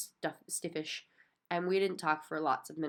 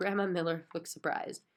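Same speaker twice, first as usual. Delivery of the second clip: plain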